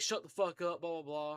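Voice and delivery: ordinary talk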